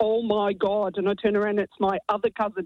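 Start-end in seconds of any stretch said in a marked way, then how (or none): 0.0-1.0 put-on heavy Derry accent, full strength. Retell hearing your other cousin from Northern Ireland come out of the toilet, in a really thick Derry accent. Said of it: "in a really thick Derry accent".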